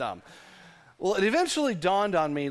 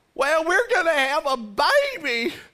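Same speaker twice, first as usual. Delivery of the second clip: very high, loud put-on old man voice, baby stretched out; 11 semitones higher, 6 dB louder than usual. Acting out Elizabeth asking Zach what the angel said: older Elizabeth voice. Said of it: "change the voice a little bit".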